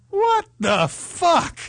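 high, very slow stunned outburst. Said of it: "his wife was probably like".

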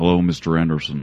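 put-on very droll delivery in an American accent. Quoting the Agent Smith character: Agent Smith's droll voice. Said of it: "the Agent Smith character".

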